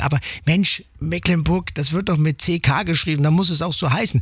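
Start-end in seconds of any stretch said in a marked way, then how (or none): none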